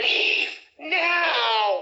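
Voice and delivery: very high, rasping corpse voice, drawn out. Narrator voices a corpse in a casket turning toward the group, raspy voice. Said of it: "in a raspy voice".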